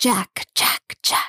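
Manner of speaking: delighted, gleeful hiss with relish. Narrator reading a creature calling to Jack from the mist, delighted hiss. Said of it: "the voice hissed delightedly".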